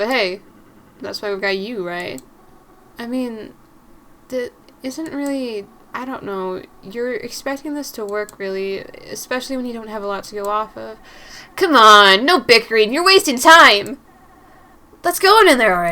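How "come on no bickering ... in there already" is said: very loud, cheap, cheesy anime heroine voice. A narrator voices a female character in his story, cheap anime voice. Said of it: "I give her that like that cheap ass anime voice".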